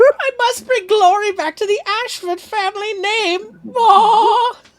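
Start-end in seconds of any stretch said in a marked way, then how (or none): 0.1-3.4 booming villain voice, belted out high and shrill. After saying someone sounds like a game character, quoting his line, Alfred Ashford impression. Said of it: "And I thought my interpretation was bad".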